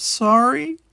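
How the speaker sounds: little, small voice, pitched very high. Trudging in last, she apologizes to the others: small voice. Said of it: "she said in a small voice".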